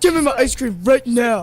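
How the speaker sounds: mocking, rude, disrespectful put-on tone. Retelling what she said to her dad: imitating a disrespectful demand. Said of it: "talked so disrespectfully to your father".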